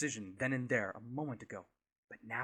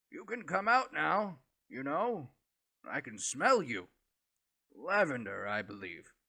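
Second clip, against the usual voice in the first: coarse, rough voice, raised and calling out; 3 semitones higher, 6 dB louder than usual. Someone calls out to Tritor from the other side of the wall, rough voice. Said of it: "A rough voice calls out".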